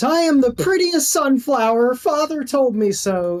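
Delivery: very high, shrill, piercing machine screech. A narrator voicing a character as she screams, screaming. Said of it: "she just screams".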